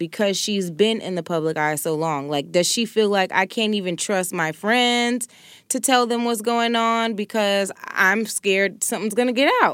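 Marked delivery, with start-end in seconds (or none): none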